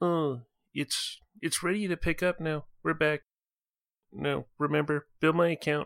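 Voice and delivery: hushed, quiet voice. A character pulls their comlink up to their snout: hushed tones. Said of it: "and just in hushed tones".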